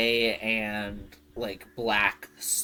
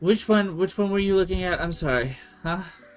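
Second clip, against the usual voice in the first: weary, worn-out dwarf woman voice, raised and high; 8 semitones higher, 5 dB louder than usual. Playing the horse seller as a customer asks to buy a horse, tired dwarven woman voice. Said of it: "It's this like tired dwarven woman".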